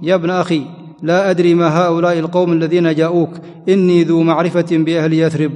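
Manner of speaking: ordinary talk, nothing marked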